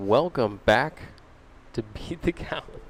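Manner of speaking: giggling, laughing through the words, barely held together. Opening the stream after a false start, laughing while talking. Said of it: "I can't do that without laughing".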